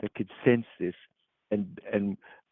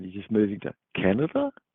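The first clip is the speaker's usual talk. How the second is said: pitch climbs up at the end on "Canada". Imitating a statement said with a question mark, rising pitch on Canada. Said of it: "said with a, a question mark, like they go up at the, the end".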